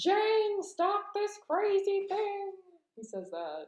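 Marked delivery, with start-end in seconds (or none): 0.0-2.5 squeaky, very high, very stretched-out character voice. Quoting what George Jetson says: George Jetson impression. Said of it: "I don't even know what George Jetson sounds like".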